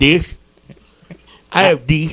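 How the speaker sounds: toothless, gummy speech, words shaped without teeth. Imitating a caller who speaks through their lack of teeth. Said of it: "You can hear the lack of teeth when they say it".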